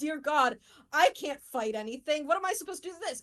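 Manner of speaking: panicked, frantic, completely at a loss. Voicing a player character who is freaking out: panicking character. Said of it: "she's panicking, she's freaking out".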